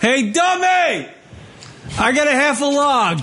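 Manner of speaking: play-acted very high, drawn-out shrieking scream. Acting out Kate Upton calling from the bathroom for the other guy, Kate Upton screaming impression. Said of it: "And she's screaming".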